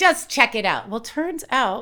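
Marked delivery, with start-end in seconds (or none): 0.0-0.9 put-on old man voice, much higher, louder. Telling friends what their grandfather said about colleges, imitating grandfather's voice. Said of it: "did he talk like that?".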